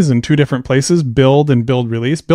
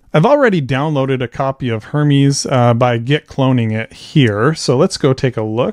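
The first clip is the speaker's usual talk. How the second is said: ordinary delivery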